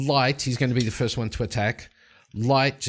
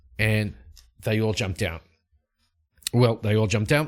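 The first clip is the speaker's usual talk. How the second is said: ordinary talk, nothing marked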